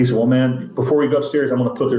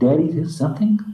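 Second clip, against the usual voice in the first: put-on female whisper, higher; 4 semitones higher than usual.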